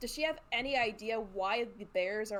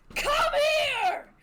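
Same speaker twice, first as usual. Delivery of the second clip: very high, loud battle cry. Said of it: "lets loose this battle cry".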